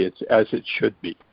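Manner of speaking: ordinary talk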